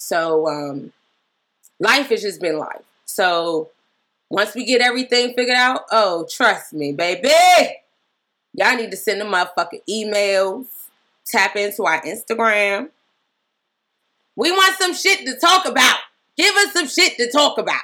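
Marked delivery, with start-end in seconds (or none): 6.3-17.8 aggressive, forceful, in-your-face delivery with rising pitch. Urging listeners to send in emails and topics: aggressive. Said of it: "you sound so aggressive".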